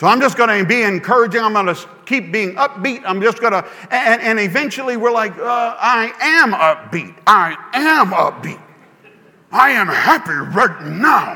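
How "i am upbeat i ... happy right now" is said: cheesy horror-movie demon voice, very slow. Acting out people insisting they are upbeat: demon voice from a bad B-movie. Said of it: "sound like a demon in a bad B-rated movie".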